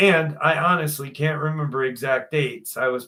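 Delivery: plain reading voice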